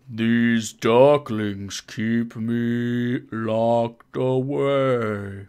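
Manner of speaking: very slow, deliberate talking-tree voice. Running a game, voicing a talking tree for the party in a slow talking-tree voice. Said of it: "I feel like you have to talk really slow".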